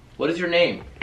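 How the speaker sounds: loud, high-pitched calling out.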